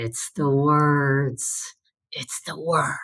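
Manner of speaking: breathy, put-on TV star voice. Retelling what was said on set after praise: breathy Adam West voice. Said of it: "breathy Adam West tone".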